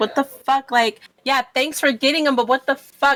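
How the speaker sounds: high, mad, acted angry outburst. Voicing a character who is mad at the returning ally: mad in character. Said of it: "so I'm gonna be mad".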